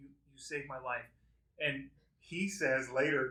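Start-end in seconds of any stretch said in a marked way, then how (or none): 0.0-1.0 mock crying with tearful choking. Retelling a serious moment, imitating the wife through tears: imitating someone crying. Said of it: "through tears, choking".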